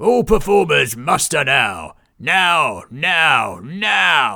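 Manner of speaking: big, booming, full-volume call, drawn out. A voice interrupts Bartholomew amid the bustling performers, in a booming voice. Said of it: "interrupted by a booming voice".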